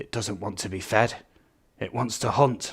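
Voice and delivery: hushed, soft, clumsy delivery. Trying out a Jurassic Park quote that someone sent in, terrible Jurassic Park quote impression. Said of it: "I'll try and do my impression on that".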